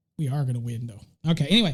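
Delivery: ordinary delivery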